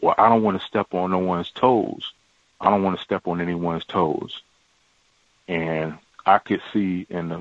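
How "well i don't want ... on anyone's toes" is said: ordinary delivery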